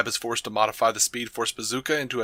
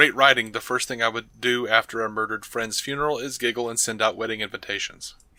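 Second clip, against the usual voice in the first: ordinary talk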